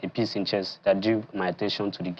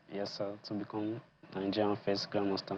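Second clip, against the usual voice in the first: barely audible, very soft, timid voice. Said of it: "I wanted to speak up".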